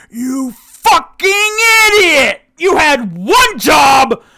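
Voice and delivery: shrill, very loud, high-pitched furious enraged yell. Narrating a tabletop scene, voicing Peggy from the other room, Peggy's angry bellow. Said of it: "Peggy bellow from the other room".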